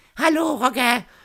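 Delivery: very high-pitched, loud voice. Retelling a WhatsApp call that reached the wrong person, imitating Heike's high voice. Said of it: "für eine hohe Stimme".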